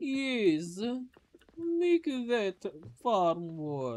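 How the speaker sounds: accent from Transylvania. Talking through their kimchi farm, in a weird Transylvanian accent. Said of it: "speaking in some like a weird Transylvanian accent".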